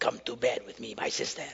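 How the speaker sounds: put-on hushed, breathy, soft Russian accent. Retelling the story, the speaker voices the brother grabbing his sister: Amnon with Russian accent. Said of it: "He sounded like a Russian".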